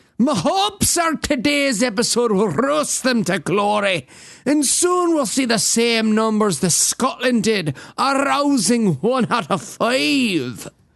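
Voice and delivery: mock Scottish accent, put-on voice. A host addresses the show's listeners in a put-on Scottish accent. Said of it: "your accent sounds like Richard Dawkins doing Fat Bastard".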